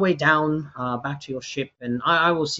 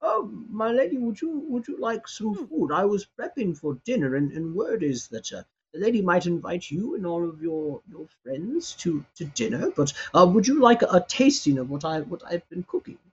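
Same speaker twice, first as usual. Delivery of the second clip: put-on old man voice, higher pitch; 3 semitones higher than usual. Describing a scene to the listener, voicing an old man at the door, old man voice. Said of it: "that old man who looks at you and he goes".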